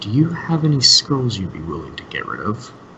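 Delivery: whispering in a low, hushed voice. Speaking to Durnan about a sensitive topic, in a low whisper. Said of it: "I kind of whisper this to him in a low voice".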